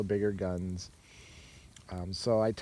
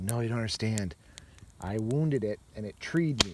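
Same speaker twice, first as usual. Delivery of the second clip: usual speaking voice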